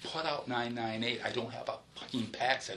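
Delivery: normal talking voice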